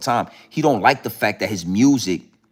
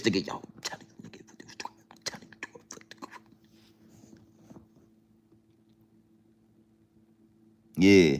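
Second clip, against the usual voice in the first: quiet, close whisper; 8 dB quieter than usual. Showing how to whisper into another person's ear: whispering in someone's ear.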